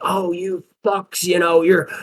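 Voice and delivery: slow, high-pitched mock ranting tirade. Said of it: "swear word filled tirade".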